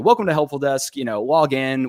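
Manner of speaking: ordinary delivery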